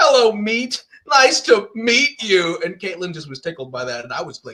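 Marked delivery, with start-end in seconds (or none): 0.0-2.6 goofy, mischievous, loud, drawn-out goofball voice. Voicing a line from the last episode: goofball character voice. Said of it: "I had a line in the last episode".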